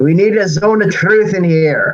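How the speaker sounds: put-on elderly priest voice, calling out. A player's character sticks his head out the temple door, shouting in elderly priest voice. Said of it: "shout in my most elderly priest voice".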